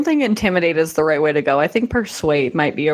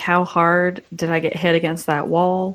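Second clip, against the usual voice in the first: ordinary delivery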